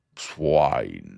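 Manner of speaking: deepest possible, very low voice. Reading a novel aloud, a dinner guest lecturing a boy: deepest voice. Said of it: "in his deepest voice".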